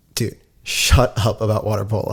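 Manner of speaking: plain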